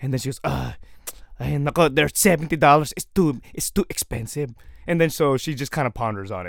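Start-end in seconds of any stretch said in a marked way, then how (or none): 0.4-4.5 slow, put-on Filipino accent. Quoting their mom about the price, in a put-on filipino accent. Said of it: "I'm just gonna put a Filipino accent on my mom".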